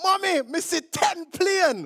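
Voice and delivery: put-on heavy Jamaican accent, childlike, high and slow. Quoting their younger self talking to their mom, in a thick jamaican accent. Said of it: "I had this very thick Jamaican accent".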